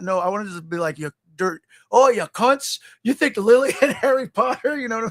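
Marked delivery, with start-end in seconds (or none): 1.0-4.8 put-on British football hooligan voice, higher. Imagining how an actor could play Hagrid: Hagrid as UK soccer hooligan. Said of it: "just really go full U K soccer hooligan".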